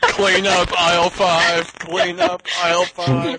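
high, flat, drawn-out monotone, said slowly. Playing a Dalek giving supermarket announcements: Dalek voice. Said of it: "Now you get Daleks in the supermarket".

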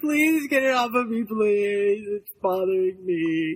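put-on begging, pleading cat voice. Voicing a frightened cat begging to be rescued: voicing Bonnie the cat, put-on pleading. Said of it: "Bonnie's like".

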